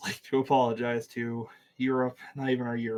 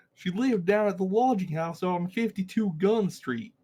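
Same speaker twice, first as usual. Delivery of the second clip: clumsy, bad put-on Southern accent, pitched up; 8 semitones higher, 4 dB louder than usual. Repeating the line after the others ask what the accent is, in a bad southern accent. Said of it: "Ooh, that was worse".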